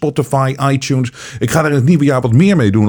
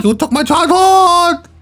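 bad Swedish accent, very high, squeaky. Trying and failing at a Swedish accent, bad Greta Swedish accent. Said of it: "Ik probeer echt een Zweedse accent te doen".

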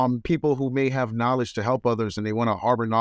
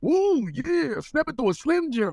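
very high, drawn-out put-on character voice. Recalling hearing the wrestler as a kid: Randy Macho Man Savage voice. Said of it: "I love doing his voice".

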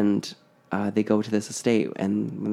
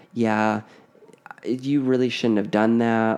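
ordinary talk

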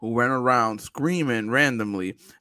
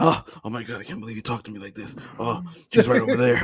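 put-on anime-style character voice. Mocking the kids who talk in anime voices: imitating kids talking in anime voices. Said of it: "the kids who talk in anime voices".

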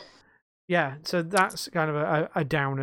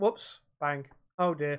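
put-on completely straight, dry, matter-of-fact deadpan delivery; 5 dB quieter than usual. Retelling how a friend betrayed him in a game: imitating Taz's straight-faced delivery. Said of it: "in the most, like, straight-faced way".

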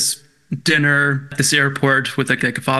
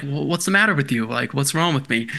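plain

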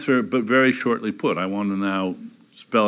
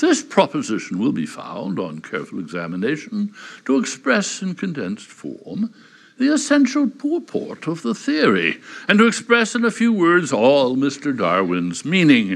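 Oxbridge accent; 5 semitones higher than usual. Reading aloud a quoted passage, in a sort of Oxbridge accent. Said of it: "I'm going to attempt to do it in a sort of Oxbridge accent".

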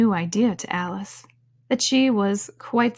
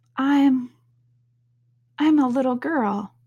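doubtful, uncertain, much slower; 5 semitones higher than usual. Narrator reads Alice answering the pigeon: doubtfully. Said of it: "rather doubtfully".

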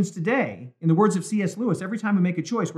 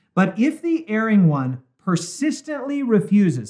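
"persistently refuses" stressed and drawn out slowly. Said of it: "underline that".

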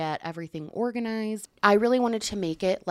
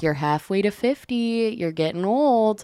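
playful, jokingly mocking, teasing delivery; 2 semitones higher, 6 dB louder than usual. Recalling teasing Charles when he turned 25, the speaker repeats the retelling mocking teasing. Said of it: "I mocked him ruthlessly".

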